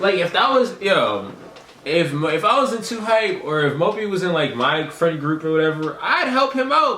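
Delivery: genuinely worked-up, upset yelling, high and loud. Reacting to how someone was treated: upset yelling. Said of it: "let me stop yelling because I'm I'm I'm actually genuinely getting upset".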